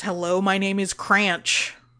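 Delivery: deep, gravelly alien voice. Storyteller voicing an alien introducing himself, deep gravelly Cranch voice. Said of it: "He says in a deep, gravelly voice".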